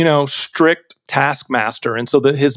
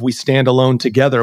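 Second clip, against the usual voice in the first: normal talking voice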